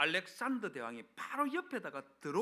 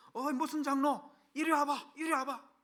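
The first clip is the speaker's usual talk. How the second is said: very high, loud, furious raised shout; 10 semitones higher, 6 dB louder than usual. Retelling how the head elder suddenly called another elder over, imitating an angry raised voice. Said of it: "언성을 높여고 화가 난 목소리로".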